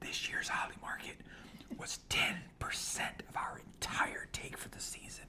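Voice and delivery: very quiet, confiding, barely voiced whisper. Sharing a surprising sales figure with a co-speaker: whispering. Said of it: "I'm gonna whisper it".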